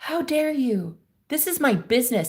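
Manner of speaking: put-on yelling voice. Retelling the homeowner yelling at the guy on the phone: imitating someone yelling. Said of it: "she yelled at the guy".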